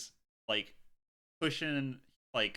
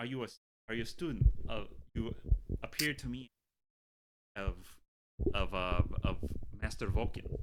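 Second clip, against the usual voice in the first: faint, lightly done put-on French accent; 2 semitones lower than usual. Playing a character in an improvised scene, in a light French accent. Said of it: "a French accent".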